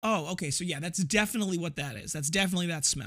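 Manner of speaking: ordinary talk, nothing marked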